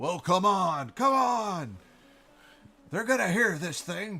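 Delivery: loud, high hollering. Narrating a game scene, a dwarven man at the back of an airship ramp yells: yelling. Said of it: "yelling at you".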